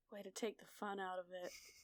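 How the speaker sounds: very soft, very quiet, sighed-out delivery. A player character reacts as an old person opens the gate, sighing. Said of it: "Jazz kind of sighs and is like".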